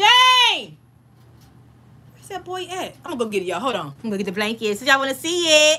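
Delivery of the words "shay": very high, long-held, drawn-out scream. Having warned viewers to close their ears, the speaker screams for Shay: screaming. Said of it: "I'm about to scream".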